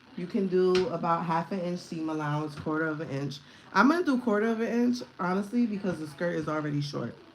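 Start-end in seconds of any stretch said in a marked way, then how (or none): 3.8-5.0 high yelling, a little too loud. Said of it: "I guess I'm yelling a little too loud".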